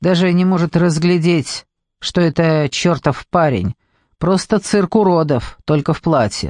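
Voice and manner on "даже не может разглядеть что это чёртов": usual speaking voice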